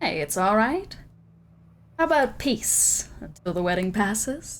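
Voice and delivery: smug, pleased-with-itself, self-satisfied voice. Recalling a character's peace offer during a roleplaying game: Pluto's smug voice. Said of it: "Remember Pluto's smug voice".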